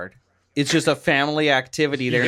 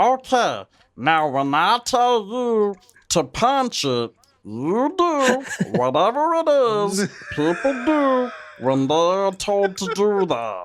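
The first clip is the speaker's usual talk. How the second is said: slow, high, swooping, sing-song, drawn-out cartoon voice; 6 semitones higher than usual. Quoting a favorite line from a cartoon: Meatwad voice. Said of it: "my favorite thing to say in Meatwad's voice".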